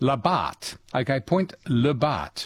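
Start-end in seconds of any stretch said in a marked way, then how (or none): 1.2-2.5 French pronunciation. Getting a place name right on air: French pronunciation. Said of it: "with a French accent".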